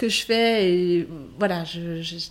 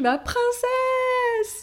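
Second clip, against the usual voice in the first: shrill, very high, ringing acted cry. Retelling a birth as the baby arrives: imitating own past shout. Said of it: "je crie".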